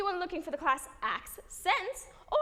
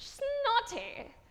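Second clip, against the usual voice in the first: clumsy put-on British accent, pitched up; 4 semitones higher than usual. Get your listener to say the word with you, in a put-on British accent. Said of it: "Say that with me in a British accent".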